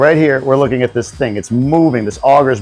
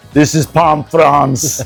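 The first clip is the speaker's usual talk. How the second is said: put-on German villain accent. Repeating the other speaker's words like an evil Die Hard character: Hans Gruber voice. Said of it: "Sounded like a German, like a, like an evil Die Hard character".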